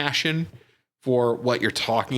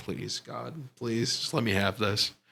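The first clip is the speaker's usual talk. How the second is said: soft, mock earnest, hard begging tone; 7 dB quieter than usual. Speaker recalls begging him to let them get a freebie: retelling begging. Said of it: "I begged and I pleaded".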